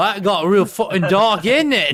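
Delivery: put-on British accent. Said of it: "That accent".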